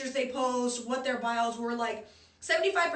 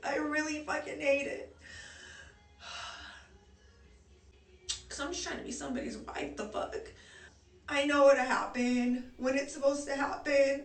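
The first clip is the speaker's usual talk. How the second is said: voice on the verge of tears; 2 semitones higher than usual. Venting about dating and being tired of it, on the verge of tears. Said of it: "I'm about to start crying".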